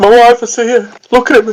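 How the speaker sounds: mock sobbing, very high-pitched, ranting. Retelling what a man in a cell said, imitating a crying man. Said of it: "he's crying".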